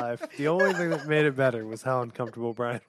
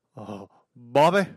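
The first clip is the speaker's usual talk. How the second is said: raised, put-on cartoon dad voice; 7 dB louder than usual. Retelling how a driver showed off his impressions: Hank Hill voice. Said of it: "I do, uh, Hank Hill".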